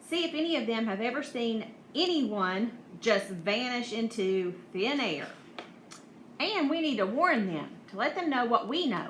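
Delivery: ordinary delivery, nothing marked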